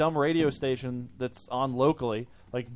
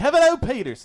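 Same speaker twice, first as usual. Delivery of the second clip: terrible put-on Irish brogue, loud and swooping; 10 semitones higher, 9 dB louder than usual. Announcing the guest who was supposed to come tonight: bad irish accent. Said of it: "that was my bad Irish accent".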